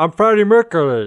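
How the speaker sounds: high, loud voice talking around big false teeth. Imitating an actor in a biopic: imitating talking with big fake teeth. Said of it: "he talks like how I imagine someone with big fake teeth".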